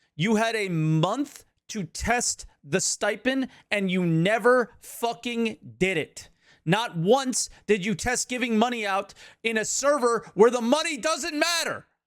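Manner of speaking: full-on, high-pitched, loud yelling rant. Venting about a game to the listener on the line, yelling. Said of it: "Sorry for yelling in your ear".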